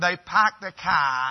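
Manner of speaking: imitated Maine accent. Describing how people in Maine talk, imitating a Maine accent. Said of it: "they have a little bit of an accent".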